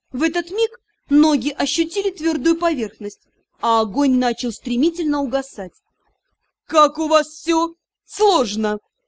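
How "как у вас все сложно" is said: slow, taunting, stretched-out mocking drawl. A lord taunts the magister and the narrator, mocking drawl. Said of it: "Издеваясь, протянул лорд Алсер".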